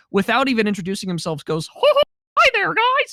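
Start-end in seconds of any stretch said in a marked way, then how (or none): 1.6-3.1 squeaky, high, loud voice. Retelling how a man's friend greeted everyone without introducing himself, in a Mickey Mouse voice. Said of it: "in a perfect Mickey voice".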